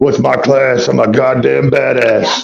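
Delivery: cranky, grumpy just-woke-up put-on voice. A player plays themself as a character, in a grumpy just-woke-up voice. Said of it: "I just took a nap and now I'm grumpy character".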